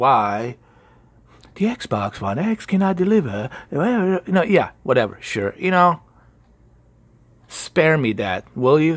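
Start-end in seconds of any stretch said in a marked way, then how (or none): 0.0-3.5 put-on formal professional broadcaster voice. Speaker mocking a video's title about the xbox one x, mock professional voice. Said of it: "in the professional voice".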